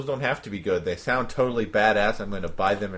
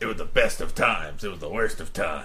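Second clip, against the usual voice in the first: gruff put-on soldier voice; 2 semitones lower than usual. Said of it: "you could read anything in that voice".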